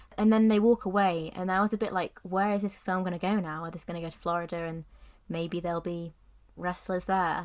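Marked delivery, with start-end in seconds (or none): none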